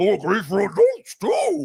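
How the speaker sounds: high, swooping, drawn-out cartoon voice. Retelling a dream where Scooby-Doo pitches merch: Scooby-Doo voice. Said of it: "he has the Scooby voice".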